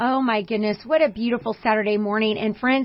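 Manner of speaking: normal talking voice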